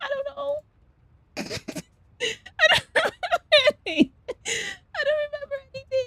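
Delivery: very high, very soft, hushed, wobbly cute voice. Asked how they ended up in a box on the street, Doka-chan's wobbly cute voice. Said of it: "Wobbly, high pitched, and very cute".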